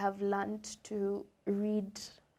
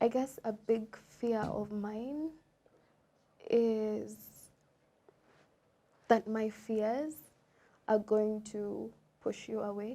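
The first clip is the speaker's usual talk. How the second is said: trying not to cry, holding back tears. Sharing a big fear with the other person, speaker is holding back tears. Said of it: "I'm really trying not to cry here".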